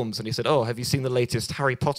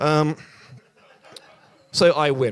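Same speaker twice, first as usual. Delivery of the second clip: usual speaking voice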